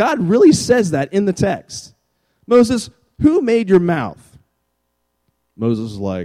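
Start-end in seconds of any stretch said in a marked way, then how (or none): 2.5-4.2 high, swooping sarcastic rising tone. Retelling God's question to Moses: imitating a sarcastic tone. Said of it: "God sarcastically says to Moses".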